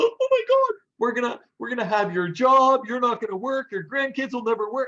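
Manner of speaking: put-on, very high, loud, frantic, alarmed outcry. Retelling how the North Americans in the room reacted, acting out people freaking out. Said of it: "They're freaking out".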